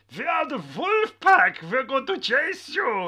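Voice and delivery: put-on very loud, very high, crazy German accent, bellowed. Retelling German U-boats taunting a boat over its Tannoy, in a crazy English-German accent. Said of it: "crazy English... English-German accent".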